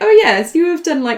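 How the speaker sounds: high, loud, chirpy mock smartwatch announcer voice.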